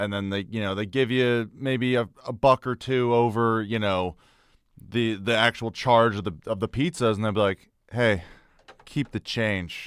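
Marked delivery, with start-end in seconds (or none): 7.9-9.9 put-on breathy whisper, proud, confident, soft and slow. Retelling how customers hand over a small tip: imitating a proud, confident customer. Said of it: "they say it, like, really, you know, proudly and confidently".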